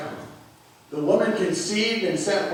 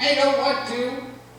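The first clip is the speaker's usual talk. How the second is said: put-on high little kid voice, stubborn; 7 semitones higher, 3 dB louder than usual. Quoting a young boy who refuses to do something, in a little kid voice. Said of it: "in that little kid voice".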